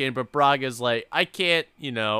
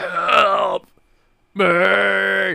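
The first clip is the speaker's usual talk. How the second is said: creaky, rasping, high voice, "me" drawn out; 5 semitones higher than usual. Retelling a scene where a man hunched in a field calls out, imitating a raspy cry for help. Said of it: "it's more raspy".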